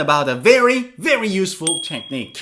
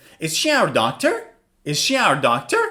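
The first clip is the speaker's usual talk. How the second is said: tune rising at the end on "doctor"; 2 semitones lower than usual. Demonstrating intonation patterns, the speaker asks the question with rising intonation. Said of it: "Rising intonation".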